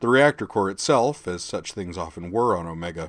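ordinary delivery

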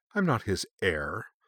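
disgusted, repulsed, revolted. The narrator answers a suggestion about his master's betrayer; disgusted. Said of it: "disgusted by the suggestion".

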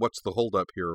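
ordinary delivery

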